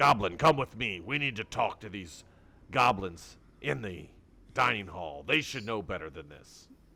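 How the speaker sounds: loud, big, hulking bugbear brute voice. Voicing a tall beefy bugbear ordering a goblin to follow: bugbear voice. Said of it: "he says".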